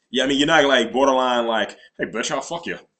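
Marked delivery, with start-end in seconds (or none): 2.0-2.8 smug, cocksure, suave, swaggering voice. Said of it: "That was my borderline Connery".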